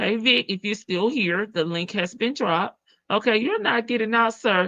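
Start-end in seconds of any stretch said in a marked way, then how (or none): none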